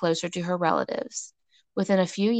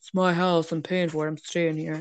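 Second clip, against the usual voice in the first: put-on dug-in, stubborn male voice. Talking about stubborn men, speaker acts out one refusing to leave: put-on stubborn man voice. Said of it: "Acknowledge that man voice that you just did?".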